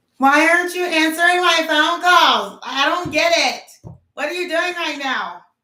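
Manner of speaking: high, loud complaining voice. Acting out the call to him from the bathroom, imitating a complaining partner. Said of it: "call him from the bathroom or wherever".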